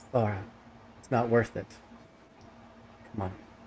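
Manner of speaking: speaking very low. A figure grabbing your hand calls out to you, very low voice. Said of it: "In a very low voice".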